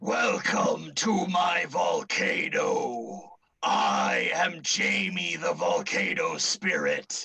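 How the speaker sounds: each word drawn out slowly. A fire-newt spirit greets Nan as she enters the volcano, Jamie the Volcano Spirit voice. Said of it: "I am [name] the Volcano Spirit. A small, tiny little newt made of fire appears. / A small, tiny little newt made of fire appears. / I am [name] the Volcano Spirit".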